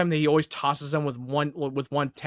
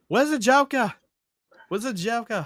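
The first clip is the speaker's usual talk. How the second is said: higher-pitched British voice; 8 semitones higher than usual. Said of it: "Batman in a British voice".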